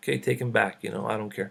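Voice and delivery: angry-sounding words. Retelling a mother's words to a rabbi's grave: imitating someone speaking angrily.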